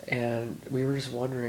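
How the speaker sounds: ordinary talk, nothing marked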